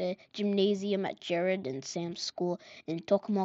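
plain

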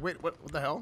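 put-on bewildered, stumbling, caught-off-guard delivery. Imagining other players spotting him on the map: imitating confused players. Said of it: "They're gonna be like".

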